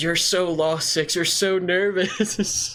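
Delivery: high, drawn-out, mock taunting shout. Retelling taunting a beaten opponent in a match: imitating own past taunting scream. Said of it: "and I screamed".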